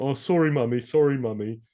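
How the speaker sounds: put-on high, blubbering crying with American accent. Retelling a character crying to his mum: imitating crying, American accent. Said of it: "in an American accent".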